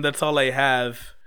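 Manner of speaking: ordinary talk, nothing marked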